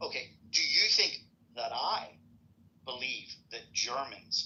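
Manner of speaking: slow, drawn-out, deliberate words. Repeating a question for the third time in an argument, speaking very slowly. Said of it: "going to speak real slow".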